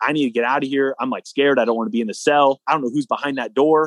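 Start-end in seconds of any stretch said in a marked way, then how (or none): none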